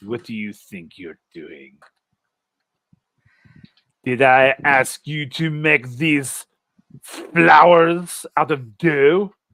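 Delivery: loud telling-off. Playing the chef who scolds a player at the table: voicing the chef. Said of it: "the chef comes over to your table".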